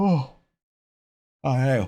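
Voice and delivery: words stretched by a yawn. Speaker discussing the emperor and a manufacturing planet, yawning while talking. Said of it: "can't stop yawning".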